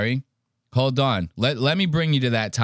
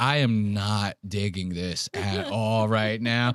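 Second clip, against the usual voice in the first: acted, thoroughly disgusted voice, low and slow; 4 semitones lower, 4 dB quieter than usual. Retelling how a friend reacted while frowning: imitating a disgusted friend. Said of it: "frown gets, like, lower and lower".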